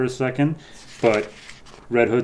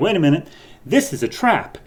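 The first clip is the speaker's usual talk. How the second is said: high, urgent shouting; 6 semitones higher than usual. Retelling a cave exploration, the speaker quotes someone who shouted a warning: retelling a shouted warning. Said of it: "Starfire just shouts at us".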